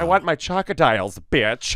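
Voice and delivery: put-on cartoon alien voice. Running through cartoon voices: Roger the Alien voice. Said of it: "it's Roger the Alien".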